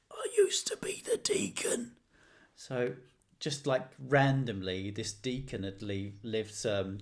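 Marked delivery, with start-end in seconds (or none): 0.2-2.0 put-on strange, breathy, whispery old man's voice. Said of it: "had this very bizarre voice".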